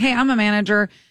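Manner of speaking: ordinary delivery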